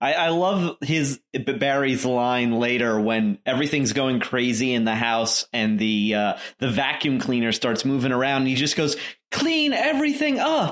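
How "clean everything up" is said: put-on child voice, much higher pitched. Speaker quoting a favourite line during chaos in the house, [name]'s little kid voice. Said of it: "in his little kid voice".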